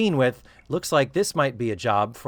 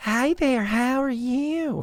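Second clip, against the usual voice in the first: very high, slow, strong Texas twang; 11 semitones higher than usual. Retelling a woman greeting a man she doesn't know, in Lisa Welch's Texas twang. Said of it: "she turns on her Texas twang".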